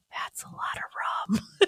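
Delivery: very quiet, hushed whisper. Speaker retells Jen, who watched the drink being poured, imitating Jen's very quiet voice. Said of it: "in this really quiet voice".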